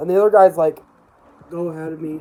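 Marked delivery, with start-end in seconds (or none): 1.5-2.2 let-down, crestfallen, glum, disappointed tone. Retelling a haunted house visit, imitating a disappointed tone. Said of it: "in a disappointed tone".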